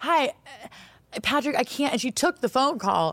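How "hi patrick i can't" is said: very drawn-out, slow, pitched-up reply. Retelling an audition where the actress answered her phone: imitating Catherine on the phone. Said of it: "That was a good impression".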